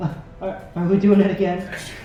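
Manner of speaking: trembling, wobbly, quivering voice with stammering. Voicing a character who turns to the group: quivering voice. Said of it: "says with a quivering voice".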